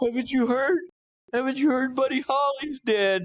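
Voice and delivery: very high-pitched, distraught, tearful sobbing voice. Retelling a neighbor's words at the door at night: imitating someone crying. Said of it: "He's crying and".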